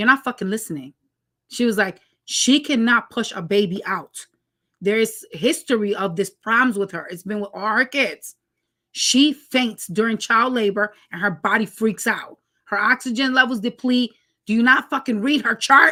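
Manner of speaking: plain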